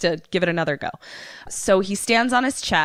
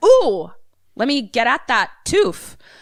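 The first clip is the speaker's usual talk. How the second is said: greedy-sounding character voice; 3 semitones higher, 3 dB louder than usual. Retelling a movie scene, acting out Leppy going for the gold: Leppy voice. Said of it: "So he is like".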